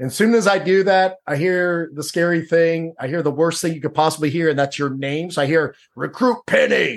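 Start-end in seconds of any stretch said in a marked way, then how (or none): 5.9-7.0 rough, growling drill instructor voice. Retelling hearing a recruit's name called out, in a growling voice. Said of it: "in that growling voice that they have".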